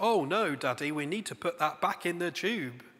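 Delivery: put-on innocent tone. Quoting his daughter's reply to him, mock-innocent tone. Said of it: "she says with this innocence".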